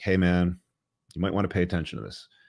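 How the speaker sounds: ordinary talk, nothing marked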